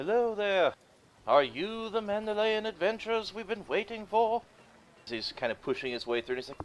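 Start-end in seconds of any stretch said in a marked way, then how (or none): 0.0-4.4 shrill, very high, loud called-out hail. Game master voicing a half-elf pushing through guards toward the adventurers, calling out. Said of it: "who then will call out".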